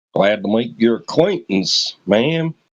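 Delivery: bad, fake put-on American accent. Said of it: "What's this accent you guys try to do".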